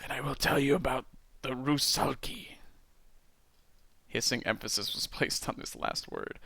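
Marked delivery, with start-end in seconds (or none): 0.0-2.6 croaked, creaky storyteller voice. Reading a story aloud, voicing a mysterious voice: croaking voice. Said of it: "croaked the voice".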